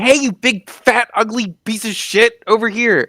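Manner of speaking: very high, shrill, taunting yell. Drawing a giant's attention away from an ally: yelling at a giant. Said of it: "start yelling at it".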